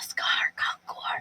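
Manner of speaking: secretive, hushed, breathy whisper. A narrator voicing a woman who looks around to be sure nobody's there, whispering. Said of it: "She whispers".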